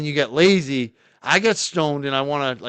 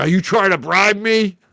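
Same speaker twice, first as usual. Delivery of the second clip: put-on angry state trooper voice, raised, pitched up; 6 semitones higher, 5 dB louder than usual. Retelling being pulled over by state police, imitating an angry cop. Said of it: "he got all mad".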